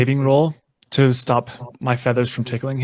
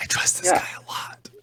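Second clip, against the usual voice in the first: hushed, quiet whisper; 5 semitones higher, 7 dB quieter than usual. Telling another character in the party that you trust this guy: whispering in character. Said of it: "I whisper it".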